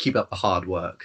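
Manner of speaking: very sarcastic, dripping with sarcasm. Playing a character leaving, a parting line in a very sarcastic tone. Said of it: "in a very sarcastic tone".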